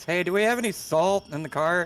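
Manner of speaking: high, drawn-out yell projected into the distance. Calling up the hill in character to ask about salt: yelling up a hill. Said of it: "I'm just gonna yell back".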